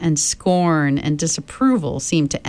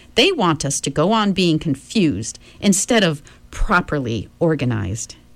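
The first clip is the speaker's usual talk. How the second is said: usual speaking voice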